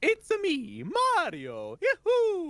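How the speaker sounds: very high, loud swooping voice. Answering a remark that the voice sounds like Mario: Mario voice. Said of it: "My voice sounds like Mario's?".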